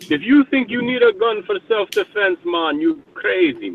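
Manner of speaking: very high, elfin, sing-song Jamaican accent. Talking about guns, the speaker puts on a Jamaican accent. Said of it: "my Jamaican accent".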